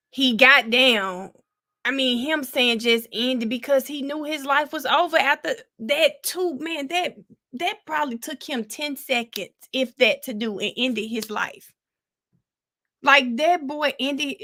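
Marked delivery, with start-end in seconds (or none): 6.6-14.5 tearful words spoken through weeping. Talking to viewers about a man's death after seeing the video, crying while talking. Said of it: "I'm sorry for crying on here".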